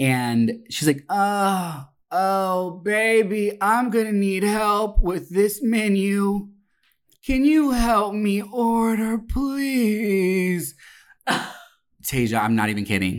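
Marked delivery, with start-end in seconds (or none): 1.1-10.8 drawn-out pleading groan. Retelling what a woman in the booth behind said, imitating Meth Mandy moaning. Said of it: "she's moaning and groaning like she's in pain".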